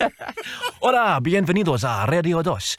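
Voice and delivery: high, bright Spanish radio announcer voice. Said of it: "I'll record you a trail in Spanish".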